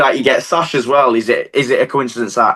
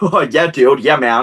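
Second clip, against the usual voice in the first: slow, put-on American accent; 3 semitones higher than usual. Retelling replying to someone while walking past, put-on american accent. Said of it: "did this American accent".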